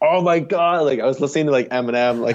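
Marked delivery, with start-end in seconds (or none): 0.0-0.8 put-on high, exasperated scream of frustration. Retelling own frustration while biking into a headwind: imitating own yelling. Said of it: "yelling and screaming".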